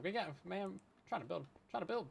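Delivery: fast, panicked scramble of words. Rushing to build a base, panicked voice. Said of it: "hear the panic in my voice".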